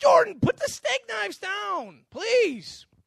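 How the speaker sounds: very high, very loud, impatient, losing-patience tone. Retelling telling jordan to put the steak knives down, higher inflection, acting impatient. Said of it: "my little higher voice inflection".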